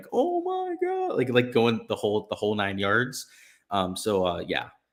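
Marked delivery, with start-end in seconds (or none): 0.1-1.2 frantic sports-commentator screaming, very high.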